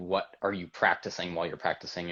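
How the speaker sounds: ordinary talk, nothing marked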